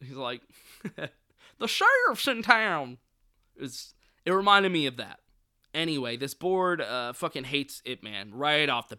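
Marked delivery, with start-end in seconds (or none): 1.6-3.0 raised, pitched-up Texan sheriff drawl. Recalling a movie character's line while talking about a film, Texas accent. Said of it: "a Texas accent".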